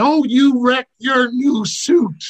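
very high, carrying, drawn-out motherly shout. Retelling a brawl, imitating mom yelling from the stands. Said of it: "my mother yelling".

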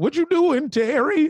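mock trembling voice. Quoting how someone sounded, imitating a shaky voice. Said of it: "his tone was very shaky".

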